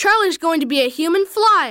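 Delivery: plain reading voice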